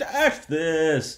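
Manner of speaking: loud, high holler in a Brooklyn accent. Picturing a product name called at a baseball game: brooklyn baseball game voice. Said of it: "sort of Brooklyn baseball game".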